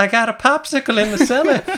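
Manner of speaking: very high-pitched cartoon old-man voice. Joke among the others about who that sounds like, doing an old Herbert from Family Guy impression. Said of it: "you did a Family Guy impression".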